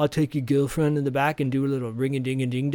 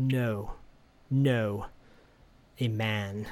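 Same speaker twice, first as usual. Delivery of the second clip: mock dead serious, very slow and deliberate; 4 semitones lower, 6 dB quieter than usual. Recapping a film, the speaker acts out Mordred's answer to Sam, retelling Mordred getting serious. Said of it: "Mordred gets serious and he goes".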